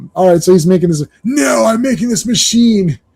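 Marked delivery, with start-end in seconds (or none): 1.2-3.0 acted, high-pitched shouting yell. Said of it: "don't yell at me".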